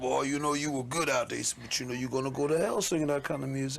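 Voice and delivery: put-on gravelly elderly voice. Retelling what a preacher grandfather said after the show: imitating grandfather's throaty tone. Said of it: "my grandfather used to talk with a very throaty kind of tone".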